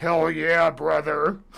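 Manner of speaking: gruff, growling pro wrestler hype voice. Imitating him for when he starts calling them brother, pro wrestler voice. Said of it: "Like a professional wrestler".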